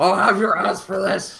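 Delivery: shouting in a character voice. Playing a captured character who protests while being caught: character shouting. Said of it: "I start shouting".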